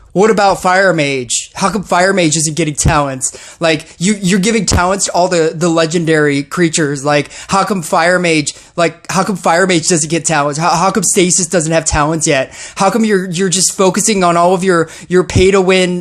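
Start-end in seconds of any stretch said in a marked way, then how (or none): none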